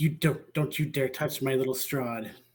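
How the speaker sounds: soft, hushed growl through each word. Retelling the scene, Chaz clutches his dragon plushie and growls at the dwarf. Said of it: "he just growls at the dwarf".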